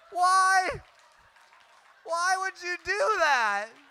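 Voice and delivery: shrill, very high, very loud tearful crying wail. Retelling being maced and asking why: imitating own past crying. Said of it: "I'm just crying".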